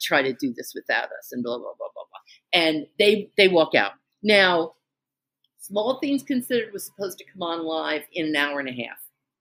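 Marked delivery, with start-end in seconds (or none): 0.0-1.3 grumbling mutter under the breath. Retelling what someone said while walking out: imitating someone muttering. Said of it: "he's muttering".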